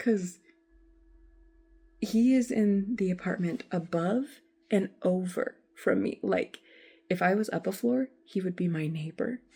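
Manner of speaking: soft, quiet, hushed, kept-down voice. Telling a story about a man living in the apartment above: talking quietly. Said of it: "that's why I'm kind of talking quietly".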